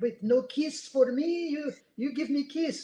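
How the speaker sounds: weird fake French accent, high and slow. Pretending someone else is rejected for a kiss, in a fake French accent. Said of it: "I'll do a fake voice, like a like a weird French guy".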